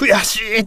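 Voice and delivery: high, frustrated cry of defeat.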